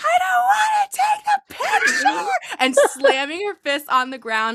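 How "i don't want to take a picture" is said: play-acted, very high, drawn-out screaming tantrum. Retelling what a four-year-old girl did, imitating a screaming child. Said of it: "she's screaming".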